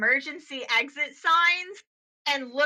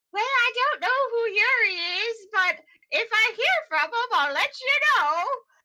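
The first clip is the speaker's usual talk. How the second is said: put-on high, sweet little old grandma voice; 8 semitones higher than usual. Voicing a text reply from a sweet old grandma: sweet old grandma voice. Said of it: "like, a sweet old grandma who".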